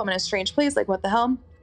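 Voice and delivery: ordinary talk, nothing marked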